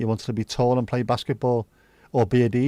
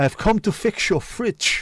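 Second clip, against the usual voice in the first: put-on Dutch accent at a slightly higher pitch; 8 semitones higher than usual. Joking about a porn-film setup, the speaker plays the arriving repairman in a Dutch accent. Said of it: "said with a Dutch accent as well".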